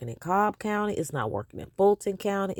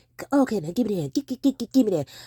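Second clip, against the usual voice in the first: halting stutter on "give", stumbling on "gi"; 3 semitones higher, 3 dB louder than usual. Mocking another speaker's way of asking for something: imitating someone stuttering. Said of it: "hear him say".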